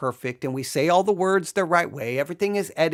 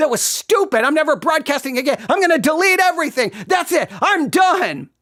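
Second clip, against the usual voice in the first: mock angry, self-berating rant, pitched up; 11 semitones higher, 4 dB louder than usual. Recalling a broadcast gone wrong, the speaker reenacts their own rant. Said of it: "just hear me go on a rant".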